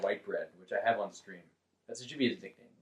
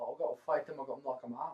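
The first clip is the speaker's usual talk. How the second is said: put-on thick Liverpool English accent, higher and quieter; 5 semitones higher, 7 dB quieter than usual. Retelling what a fighter said about himself: Darren Till impression. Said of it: "almost Scottish English accent, you know, where it's, like, really thick".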